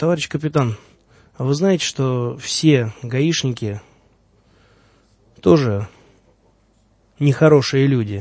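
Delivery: ordinary talk, nothing marked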